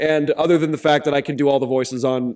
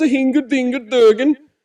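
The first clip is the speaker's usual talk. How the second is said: put-on loud, high-pitched Norwegian accent; 11 semitones higher, 5 dB louder than usual. Speaker running through character impressions, now Toki; Toki Norwegian accent. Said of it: "he says lots of S's because he's the Norwegians".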